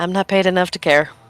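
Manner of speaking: mumbled under the breath. Player's character turns back to the booth and speaks: muttered under breath. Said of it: "under my breath I go".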